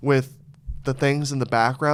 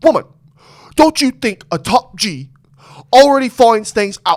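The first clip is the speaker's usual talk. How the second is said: very loud, high-pitched, belted voice; 9 semitones higher, 11 dB louder than usual. Retelling how they were imitating Andrew Tate: Andrew Tate voice. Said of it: "we were imitating Andrew Tate".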